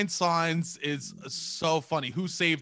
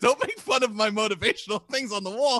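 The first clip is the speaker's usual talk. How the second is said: angry, indignant, high, cross scolding tone; 6 semitones higher, 4 dB louder than usual. Retelling her reply after being teased about wall signs: imitating someone angry. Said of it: "she got so pissed at me".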